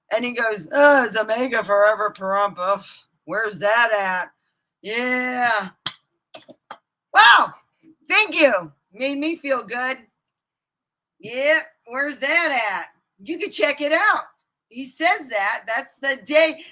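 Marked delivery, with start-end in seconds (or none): 0.7-14.2 acted, offhand, couldn't-care-less indifference, drawn-out "yeah". Retelling what a man said on his live feed: imitating someone not caring. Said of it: "like he really didn't give a fuck".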